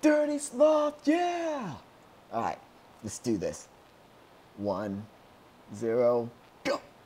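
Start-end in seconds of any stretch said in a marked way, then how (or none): 0.0-1.7 high, slow cheering shout. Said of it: "Just be like".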